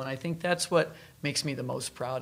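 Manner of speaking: normal talking voice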